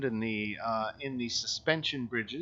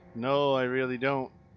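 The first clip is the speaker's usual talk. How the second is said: glum, dejected, depressed-sounding put-on voice; 4 dB louder than usual. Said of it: "you sound plenty depressed".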